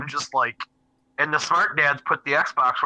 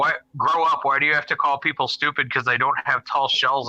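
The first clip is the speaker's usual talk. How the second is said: usual speaking voice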